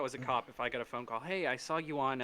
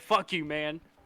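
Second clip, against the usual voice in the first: put-on, raised, angry, pissed-off outburst; 3 semitones higher, 6 dB louder than usual. Asking a co-host whether they yell back at angry people on the phone, mock-angry. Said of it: "Do you get super pissed off and go".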